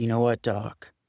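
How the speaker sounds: put-on New England accent. Quoting a man's reply to the speaker's apology, in a New England accent. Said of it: "Kind of in that New England accent".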